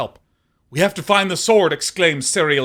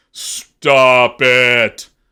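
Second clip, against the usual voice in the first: deep, loud tree-spirit creature bellow; 3 semitones lower, 7 dB louder than usual. Narrator voicing the tree folk as a player climbs it: deep bellowing tree voice. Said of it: "The tree folk's deep voice bellows".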